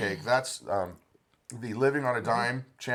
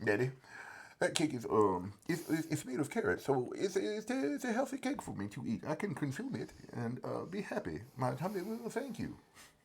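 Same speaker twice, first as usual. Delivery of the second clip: put-on halting, repetitive, swooping grandmother voice; 4 semitones higher, 8 dB quieter than usual. Imitating Nana talking about eating carrot cake: imitating Nana. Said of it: "That's how Nana talks".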